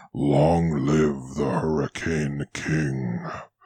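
deep, hushed, very low, soft dragon murmur. A narrator voices a massive dragon speaking to the party: murmuring dragon. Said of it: "the dragon simply dips its gigantic head and murmurs".

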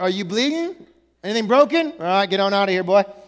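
play-acted curt, brusque, matter-of-fact, no-nonsense tone. Retelling own reaction to a hurt child: imitating own brusque self. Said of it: "I'm a little low in the compassion".

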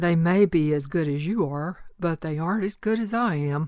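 unhurried, slow, lazy drawl, words stretched out. Retelling a classmate's reply in the argument: imitating a classmate's drawl. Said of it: "in his usual drawl".

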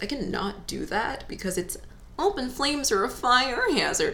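put-on dopey voice. Talking about why you cannot burn candles: dumb voice. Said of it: "I said it in a dumb voice".

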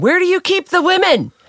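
very high, shrill, loud screaming. Retelling an older man at the kitchen window screaming in, imitating someone screaming. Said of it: "he starts screaming".

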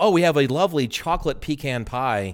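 ordinary talk

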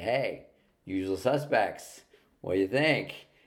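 mock self-satisfied gloat, slow and drawn-out. Retelling walking into the boss's office after an Oscar win: imitating own smug remark. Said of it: "with this smug look like".

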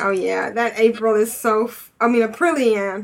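normal talking voice

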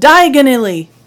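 put-on very loud, high, flustered, nervous outburst. Describing a movie scene, the speaker acts out a character's line: imitating a nervous blurt. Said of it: "and he's all nervous".

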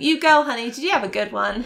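put-on American accent. Acting out a greeting at a counsellor shift change: put-on american accent. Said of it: "In an American accent as well".

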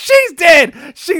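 very high, very loud screaming. Describing a man's reaction video to a listener, retelling his scream. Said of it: "he just like screams like".

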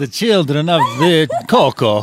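Italian-accented delivery. Joking about who Count Chocula's children are: Italian accent. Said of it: "That was Italian".

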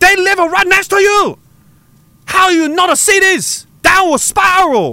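high, slow, mock Beijing Chinese accent. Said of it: "Everybody's doing Chinese accents now".

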